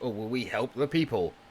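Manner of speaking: usual speaking voice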